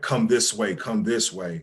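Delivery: ordinary delivery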